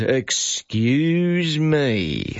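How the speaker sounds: slow, drawn-out sneering putdown tone.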